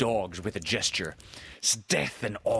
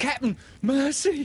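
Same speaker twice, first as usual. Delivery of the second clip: trembling whimper, much higher and louder; 5 dB louder than usual. A pirate begs his captain for mercy, whimpering and trembling. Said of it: "Starkey whimpered, all a tremble now".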